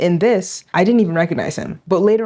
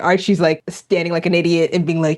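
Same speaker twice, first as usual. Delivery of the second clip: ordinary talk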